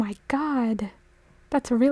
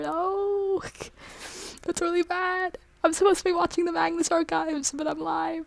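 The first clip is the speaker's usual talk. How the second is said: choked up, near tears, "no" drawn out; 5 semitones higher, 4 dB quieter than usual. Speaking live after bad news about getting a therapy appointment, about to cry. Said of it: "And I'm about to cry".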